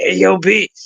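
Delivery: hoarse, gravelly, rasping morning voice. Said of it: "sound like D M X in the morning".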